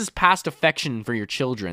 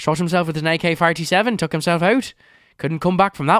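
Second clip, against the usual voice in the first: put-on Irish accent; 3 semitones higher than usual. Reading a story aloud for laughs: Irish accent. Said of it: "sounded really funny to say in an Irish accent".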